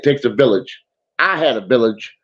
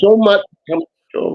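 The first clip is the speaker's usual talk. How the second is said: high voice on the edge of tears; 9 semitones higher than usual. Show host thanking a guest for coming on, almost in tears. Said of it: "I'm almost in tears".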